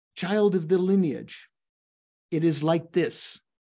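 ordinary talk, nothing marked

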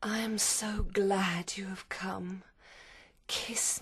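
strange, oddly voluptuous, sensual voice. Lucy, still asleep, speaks to Arthur in a strange, voluptuous voice. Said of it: "in a strange, voluptuous voice".

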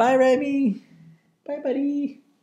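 very high, doting pet-talk voice.

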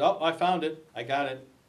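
plain

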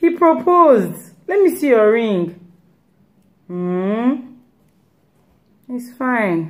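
put-on grudging, unenthusiastic, very slow and drawn-out. Imitating a friend reacting to a new car and house: imitating an unenthusiastic friend. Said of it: "the lack of enthusiasm in their voice".

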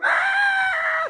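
put-on very high, loud, bloody baby scream.

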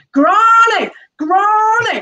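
put-on very high small child shout. Recalling shouting for grandmother across a supermarket at age three: retelling a small child's shout. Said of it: "I shouted across the supermarket".

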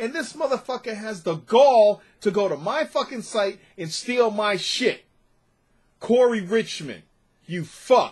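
very angry. After someone took a story only their site had posted, the speaker vents, very angry. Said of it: "I'm so fucking pissed right now".

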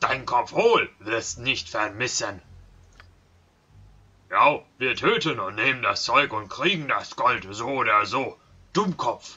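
very loud, slow, plodding, broken half-ogre brute voice. Half-ogre guards threatening travelers over gold, in a half-ogre guard voice. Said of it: "Mit Wach, Halbogern, ... Ich gemar, ich hungrig".

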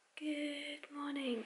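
hushed whisper. Greeting viewers early in the morning while others still sleep: whispering. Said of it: "I'm whispering because not everyone is awake".

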